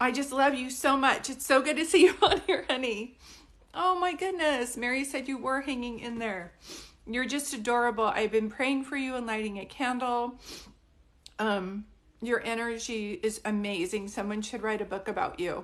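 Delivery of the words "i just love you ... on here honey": loud, choked-up crying with tender affection. Speaking to someone they're so excited to hear from, crying. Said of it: "I can't believe I'm crying".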